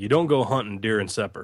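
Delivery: put-on Southern Texas drawl. Quoting what his granddaddy used to say, in a Southern Texas drawl. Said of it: "in his Southern Texas drawl".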